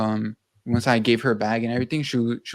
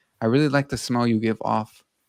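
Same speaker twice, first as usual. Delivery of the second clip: put-on smirking tone. Cashier retelling what a customer said after being rung up, mimicking a smirk. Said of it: "with a smirk on her face".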